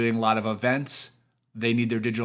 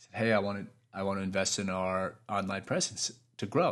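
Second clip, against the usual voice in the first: ordinary talk, nothing marked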